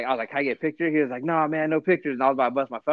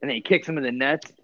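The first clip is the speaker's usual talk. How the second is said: ordinary talk, nothing marked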